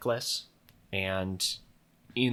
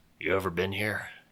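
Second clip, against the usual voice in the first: put-on gruff old sailor voice. Voicing a prickly old seafarer as the others sail up, gruff Mattis Snell voice. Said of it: "just sort of gruffly goes".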